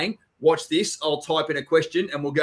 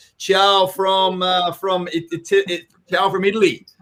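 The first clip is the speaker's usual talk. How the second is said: loud fake Brazilian accent drifting into Italian; 4 semitones higher, 5 dB louder than usual. Making a quick announcement to ladies and gents in a put-on Brazilian accent. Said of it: "That's my that's my Brazilian accent".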